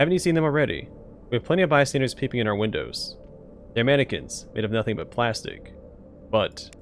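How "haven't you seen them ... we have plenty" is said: usual speaking voice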